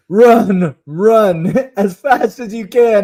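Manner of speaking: mock very slow, long-stretched, high party yell. Retelling a party costume bit, imitating a friend yelling. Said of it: "Alex would yell".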